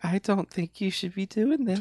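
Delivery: small, soft, high, mousy little voice. Retelling a movie scene, quoting a teacher objecting: mousy Famke Janssen voice. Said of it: "mousy Famke Janssen, and she's like".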